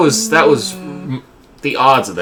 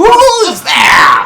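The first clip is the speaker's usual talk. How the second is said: loud, very high, all-out holler; 7 dB louder than usual. Player character hearing a voice with no one around, shouting. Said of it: "I shout very thoroughly".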